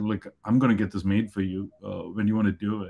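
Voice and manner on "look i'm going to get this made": plain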